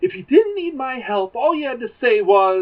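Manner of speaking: put-on rant. Retelling a sitcom scene where a character keeps complaining: imitating a rant. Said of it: "he's still ranting about it".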